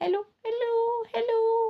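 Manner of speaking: high, thin, piping little voice. Voice lesson on pitch, showing how high pitch sounds: high, thin voice. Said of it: "जैसे पिच अगर हाई है, ... पतली आवाज आ रही।".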